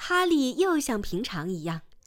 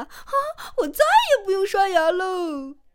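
loud, high, joyful shout of relief; 7 semitones higher, 5 dB louder than usual. Delighted his teeth are all gone, a character cries out, shouting happily. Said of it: "他大叫道".

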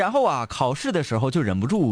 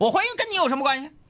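put-on angry voice, pitched higher. Retelling a teacher's reply to a student's remark: imitating an angry teacher. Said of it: "就生气了".

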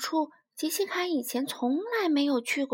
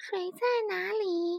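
small, thin, piercing shrill voice, slow; 6 semitones higher than usual. A crocodile speaks to the stunned frogs, in a small but shrill voice. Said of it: "用一种小小的却刺耳的声音说".

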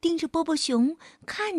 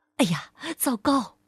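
plain reading voice

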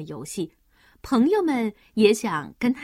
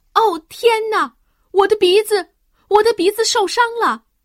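very loud, very high howl of pain; 10 semitones higher, 8 dB louder than usual. Goofy has fallen and hurt his nose; crying out in pain. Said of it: "疼得大叫起来".

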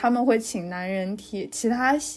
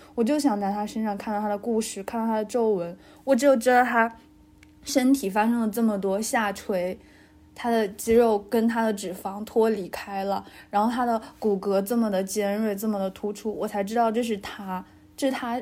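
normal talking voice

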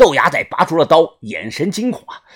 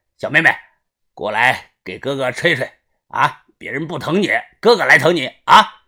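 loud, leering calling out with sinister laugh; 3 semitones lower than usual. A man calls out to another, loudly, with a sinister laugh. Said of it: "阴笑的大声的叫着".

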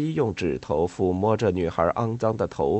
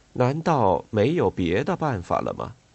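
ordinary delivery

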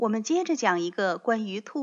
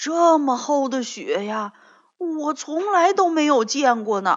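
loud, amazed exclamation full of wonder; 4 semitones higher, 7 dB louder than usual. Stepping outside into fresh snow with a friend, exclaiming in amazement. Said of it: "跳跳惊叹道".

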